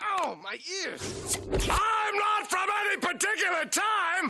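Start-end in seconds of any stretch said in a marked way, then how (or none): 1.5-4.3 unnaturally loud, slow shout, every word boomed out. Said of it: "everyone talks like this".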